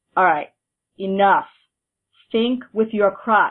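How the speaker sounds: play-acted stern, firm, no-nonsense voice, cut short. Retelling what he said during mambo rehearsal: imitating a stern command. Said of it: "very sternly he said".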